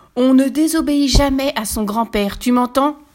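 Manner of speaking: loud, booming, high, big-voiced wolf bellow. Narrator reads the wolf Lucas shouting at Pierre: yelling in his biggest voice. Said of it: "hurle Lucas de sa plus grosse voix".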